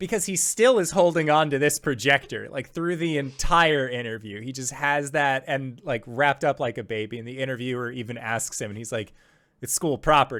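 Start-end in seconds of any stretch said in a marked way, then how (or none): 9.6-10.4 imitated flat, expressionless tone. Retelling what a man said when an interviewer asked him, mimicking a deadpan reply. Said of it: "he says like the same deadpan".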